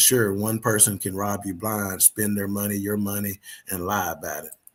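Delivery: ordinary delivery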